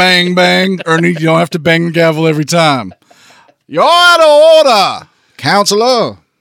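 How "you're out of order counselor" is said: high, swooping, sing-song put-on commercial accent. Imitating the judge's courtroom lines: Colonel Sanders accent. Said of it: "he was doing a Colonel Sanders K F C commercial".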